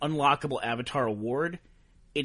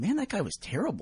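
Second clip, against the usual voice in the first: mock casual, soft, pitched-up mild concern; 5 semitones higher, 5 dB quieter than usual. Retelling what the player who killed him said over voice chat: imitating mild concern. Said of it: "the right little mix with a little touch of concern".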